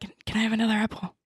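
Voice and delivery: whispering. Asking someone nearby a quick question, in a whisper. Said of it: "I'm gonna whisper to Clyde".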